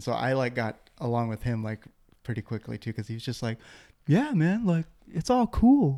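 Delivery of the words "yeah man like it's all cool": very high-pitched put-on voice. Retelling how a talkative friend talked: imitating John Jones. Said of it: "You just did that impression so well".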